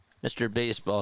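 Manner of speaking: usual speaking voice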